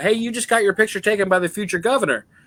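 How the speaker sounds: very high pitched, excited yelling. Retelling how a companion at a bar called out to a table: imitating a friend yelling. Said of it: "the dude I was with yelling it out".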